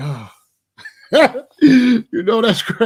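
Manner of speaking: relieved, tension released. Telling how others finally saw the spaceship too; reenacting past relief. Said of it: "I was relieved".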